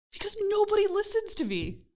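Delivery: acted-out fed-up shout, shrill and very high. Retelling a reply to family at home: imitating own yelling. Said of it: ""Why are you yelling?"".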